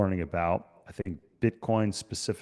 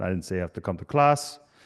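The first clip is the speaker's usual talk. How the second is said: put-on thick, heavy Austrian accent; 3 dB louder than usual. Retelling what the man who called the speaker said, in a thick Austrian accent. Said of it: "in his thick Austrian accent".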